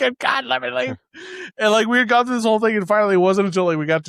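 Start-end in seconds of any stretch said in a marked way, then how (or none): 0.0-1.0 put-on scream, higher. Retelling being chased down a hallway: retelling own screaming. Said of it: "and I'm just screaming".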